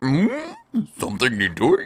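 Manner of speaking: terrible put-on lowly-worker voice, high and swooping. Acting out a peon standing there, bad peon voice. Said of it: "a peon standing there like".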